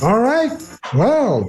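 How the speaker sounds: talking with mouth full. Starting the show, talking with mouth full. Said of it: "you didn't just start the show with your mouth full".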